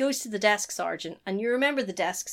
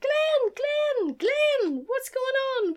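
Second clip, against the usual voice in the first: mock-screaming, much higher, slower; 5 dB louder than usual. Retelling a scene where she climbs the stairs calling to glenn: retelling a scream. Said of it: "she's screaming like".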